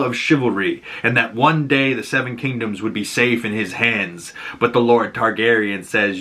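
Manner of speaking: ordinary talk, nothing marked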